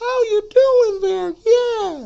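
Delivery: loud voice pitched way up. Showing how a teenage boy's voice sounds: Elmo voice. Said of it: "that Elmo voice".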